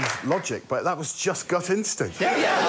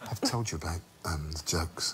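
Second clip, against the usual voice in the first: whispered, much lower and quieter; 13 semitones lower, 9 dB quieter than usual.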